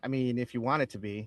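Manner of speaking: gloomy, deflated, depressed-sounding delivery. Answering whether a remark was a pun: sounding depressed. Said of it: "why you sound depressed now?".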